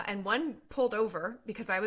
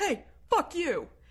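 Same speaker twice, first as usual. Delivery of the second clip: acted-out, pitched-up rude holler in kid voice; 8 semitones higher than usual. Speaker retelling what a kid yelled out of a school bus: retelling a kid's yell. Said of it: "a kid just yells out".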